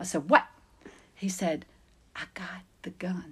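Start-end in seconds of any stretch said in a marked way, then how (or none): 2.1-3.3 very quiet, breathy, barely voiced whisper. Recounting a scene, the speaker quotes an officer reporting to him, retelling a whisper. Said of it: "And he's like whispering".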